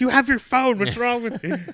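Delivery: play-acted, very high, mad, fed-up tone. Retelling his wife's reaction to the Weather Channel request, imitating her getting mad. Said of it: "She was getting so mad".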